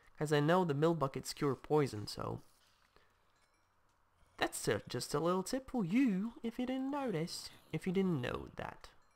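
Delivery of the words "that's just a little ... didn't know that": attempted put-on English accent. Giving viewers a tip while playing a game, in an attempted english accent. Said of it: "I'm trying to do an English accent".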